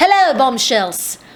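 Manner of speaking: clumsy, bad put-on British accent attempt. Greeting the bombshells at the start of a high-end makeup haul, in a British accent. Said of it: "I feel like a British accent is most appropriate".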